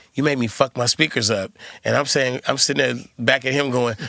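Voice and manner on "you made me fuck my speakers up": put-on angry man voice. Retelling a stranger at a gas station complaining about his speakers: imitating an angry man. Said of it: "He's angrily telling me".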